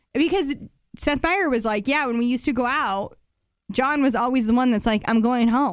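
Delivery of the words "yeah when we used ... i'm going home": ordinary talk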